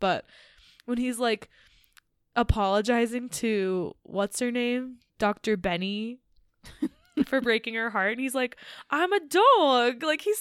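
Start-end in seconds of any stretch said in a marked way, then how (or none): 8.9-10.0 put-on thick, loud New York accent, "dog" drawn out. Retelling a scene where a character apologizes, quoting him in a strong new york accent. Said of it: "such a strong like New York accent".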